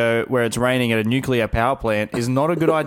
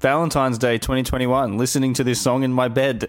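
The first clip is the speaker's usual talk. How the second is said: ordinary delivery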